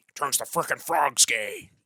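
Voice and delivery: put-on loud, slow ranting voice. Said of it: "Do your best Alex Jones impression".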